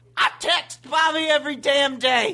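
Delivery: full-throated, high, frenzied screaming. Ranting about texting someone every day to join the app: screaming. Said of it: "You hear him screaming".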